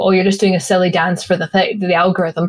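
ordinary talk, nothing marked

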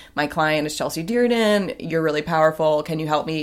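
usual speaking voice

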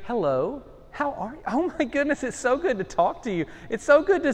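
high, put-on telephone voice. Retelling his wife answering her ringing phone mid-fuss: imitating her phone voice. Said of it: "she has a phone voice".

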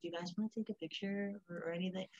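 very soft, hushed, very quiet voice. Retelling what a guy said to her and her friends, in a really soft voice. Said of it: "really soft voice".

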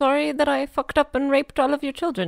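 timid, meek, soft Canadian accent. Taking her turn in a group impression game, doing a meek Canadian accent. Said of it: "Canadian. Do it".

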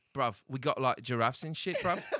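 put-on Cockney accent. Joking with friends about the worst accents, in a put-on Cockney accent.

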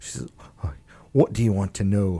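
put-on soft Scottish accent, dwarf voice. Game master voicing a dwarf character during a tabletop game, Scottish accent. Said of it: "she slipped into a Scottish accent".

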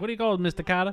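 put-on New York accent. Imitating an actor's line while watching a show: Travolta impression. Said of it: "Travolta's like".

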